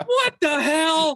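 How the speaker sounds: startled shrill yelp, very high and very loud. Retelling a movie scene where boxes fall on the doll: Brad Dourif's shrill cry. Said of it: "lets out this like shrill".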